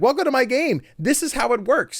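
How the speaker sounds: very high, squeaky puppet frog voice. Describing a game's host character, imitating a froggy Muppet character. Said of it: "a little blue froggy looking guy who's just like".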